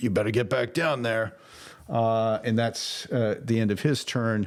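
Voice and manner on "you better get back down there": menacing, threatening ogre-like brute voice. Narrating a game, voicing a chain-swinging ogre: threatening ogre voice. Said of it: "He's just like threatening".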